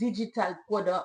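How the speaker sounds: accent from Haiti. Asked to say a list item again, saying it with a Haitian accent. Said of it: "say it with my Haitian accent".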